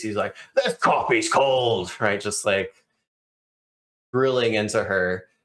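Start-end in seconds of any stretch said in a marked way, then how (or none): 0.6-1.9 angry, barking yell. Voicing a boss yelling at a secretary over coffee: yelling at a secretary. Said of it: "he is yelling at one of his secretaries".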